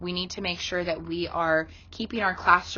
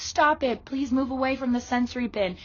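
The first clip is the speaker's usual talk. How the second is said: harsh, loud, aggressive scolding voice, pitched up; 7 semitones higher than usual. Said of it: "in a loud and aggressive voice".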